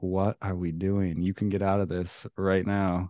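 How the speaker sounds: ordinary talk, nothing marked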